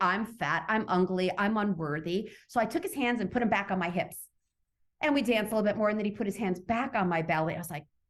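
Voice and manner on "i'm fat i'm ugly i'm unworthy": ordinary delivery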